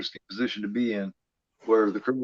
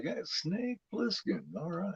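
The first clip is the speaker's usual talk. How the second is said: respectful, impressed tone, pitched up; 8 semitones higher, 12 dB quieter than usual. Imitating how a movie character says a name: imitating an impressed tone. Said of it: "like he, he's impressed".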